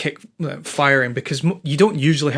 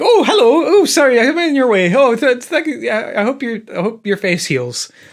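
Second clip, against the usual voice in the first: startled, pitched-up, apologetic Canadian politeness; 9 semitones higher, 4 dB louder than usual. Imitating people startled by a jump scare: imitating canadian apologetic reaction. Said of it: "kind of Canadian apologetic".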